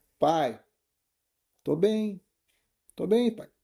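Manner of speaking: put-on uneasy, troubled voice, high and slow. Retelling how a daughter answers on a voice message, sounding not okay. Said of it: "tem coisa errada aí".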